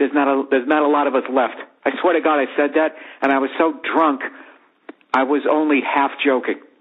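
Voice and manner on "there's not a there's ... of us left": normal talking voice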